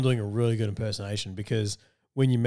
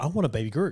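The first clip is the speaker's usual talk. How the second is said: plain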